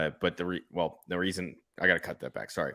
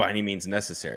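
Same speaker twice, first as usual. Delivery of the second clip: ordinary delivery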